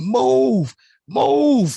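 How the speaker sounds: put-on yelling. Telling a friend how you reacted to a show, you quote yourself screaming. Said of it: "I would jump up out the seat".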